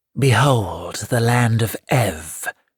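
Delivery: slow, drawn-out, sibilant hissing. Narrator reads the Gnome King's line, in a hissing Gnome King voice. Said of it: "hissed the Gnome King".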